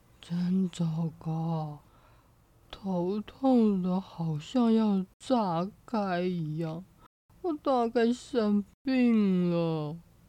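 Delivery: listless, strengthless, feeble, low muttering to oneself. A man wakes up feeling unwell and talks to himself in a weak, feeble voice. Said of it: "他有气无力的自言自语".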